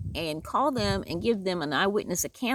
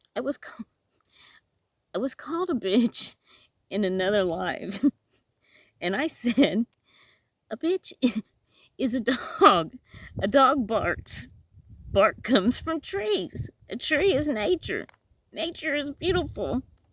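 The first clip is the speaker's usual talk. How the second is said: holding back laughter while talking, higher; 4 semitones higher than usual. Reading out a funny comment and trying to say it without laughing: stifling laughter while talking. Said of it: "I'm gonna try and say it without laughing".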